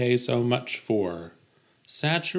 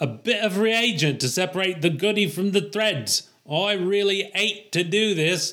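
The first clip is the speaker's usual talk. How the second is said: put-on pitched-up Cockney accent, H dropped from hate; 7 semitones higher than usual. Voicing a character in a Cockney accent, dropped H's. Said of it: "they always drop their H's, the Cockneys".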